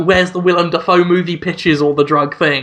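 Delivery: ordinary talk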